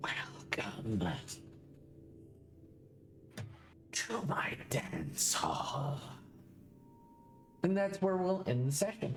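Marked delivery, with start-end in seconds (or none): 0.0-6.0 slow, raspy, rasping half-whisper, sounding long unused. Ending the session, the narrator voices a being in the catacombs: raspy, long-unused voice. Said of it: "it says in a raspy voice, almost like it has never, it hasn't spoken in many years".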